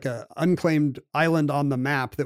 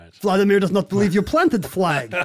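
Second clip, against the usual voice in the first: unconvincing fake Russian accent, higher; 5 semitones higher, 3 dB louder than usual. Retelling what a man said about a planted flag, bad Russian accent as Vladimir. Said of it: "i don't think that's a good Russian".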